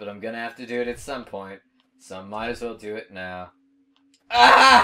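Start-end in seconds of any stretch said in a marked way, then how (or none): 4.3-4.8 very loud, high, raw primal scream. Dying in a game and losing progress: primal scream. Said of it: "Had to, had to give a primal scream there".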